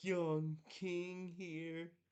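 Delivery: slow, drawn-out, grand mock royal voice. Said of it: "I can't even say that with a straight face".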